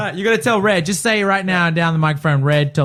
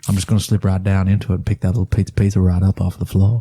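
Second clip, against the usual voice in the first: put-on very low Deep South accent; 9 semitones lower than usual. Taking turns doing Matthew McConaughey, the speaker slides into it: Matthew McConaughey Southern accent. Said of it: "I'd slide right into that accent".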